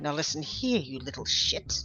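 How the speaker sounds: very quiet, hushed, threatening under her breath. While flailing as men come to her aid, she turns to the mimic: very quiet threat. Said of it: "very quietly".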